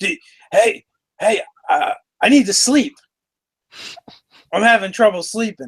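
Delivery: botched stage whisper that carries loudly. Voicing Troll calling out to the two players: failed loud whisper. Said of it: "supposed to be hushed and whispered, that, but isn't".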